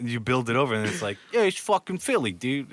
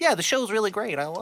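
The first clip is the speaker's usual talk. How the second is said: high, put-on preppy British voice; 9 semitones higher than usual. Showing how a man from the UK talks in his interviews, imitating a preppy voice. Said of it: "he has like those preppy ass voice".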